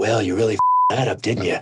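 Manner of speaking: chilly, menacing western gunslinger voice. Recalling the silence after his bit, Clint Eastwood voice. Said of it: "I heard Clint Eastwood's voice".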